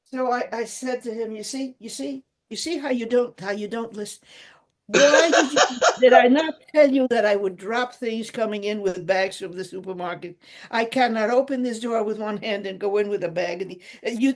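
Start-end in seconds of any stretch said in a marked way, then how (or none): none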